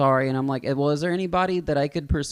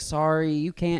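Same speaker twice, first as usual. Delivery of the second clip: ordinary delivery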